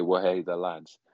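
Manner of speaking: thick French accent. Imagining how someone would sound saying the phrase, in a thick French accent. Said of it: "that thick French accent say".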